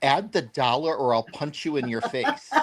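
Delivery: mock stern, half-joking, threatening tone. Retelling a customer's joking threat to the seller: imitating a stern threat. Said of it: "she looked at me with a very stern face".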